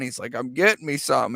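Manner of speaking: ordinary delivery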